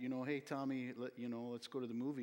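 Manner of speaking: best-effort put-on Minnesota accent. The speaker recalls suggesting a movie to a companion, best minnesota accent. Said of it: "in my best Minnesota accent".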